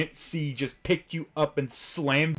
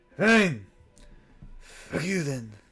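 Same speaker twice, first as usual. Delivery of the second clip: quiet, muttered under the breath. Voicing a shopkeeper after a customer walks off: muttered under her breath. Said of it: "Under her breath".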